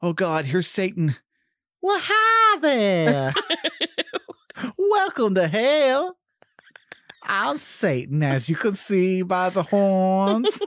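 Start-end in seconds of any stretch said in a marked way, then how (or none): 1.8-10.6 put-on very slow, high-pitched old woman voice. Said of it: "Why does she sound like that?".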